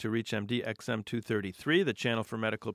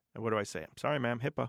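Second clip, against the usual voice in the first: normal talking voice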